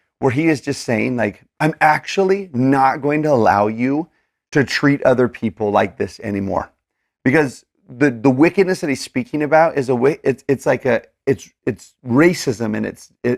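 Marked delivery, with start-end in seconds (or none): none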